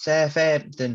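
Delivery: put-on slow, drawn-out Southampton accent. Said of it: "That's a great Southampton accent".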